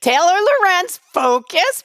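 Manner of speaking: playful teasing with lifted pitch. The other person has just said sorry while getting to the point; answer them, teasing. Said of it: "I'm teasing you".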